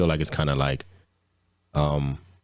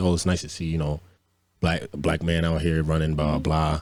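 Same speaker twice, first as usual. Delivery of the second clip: ordinary talk, nothing marked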